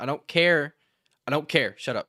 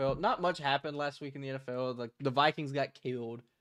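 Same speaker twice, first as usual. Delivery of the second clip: plain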